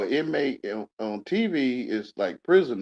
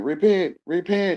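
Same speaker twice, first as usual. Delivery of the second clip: mock screaming man's voice; 7 semitones higher, 4 dB louder than usual. Describing a man going around screaming, imitating a man screaming. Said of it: "the man going around screaming".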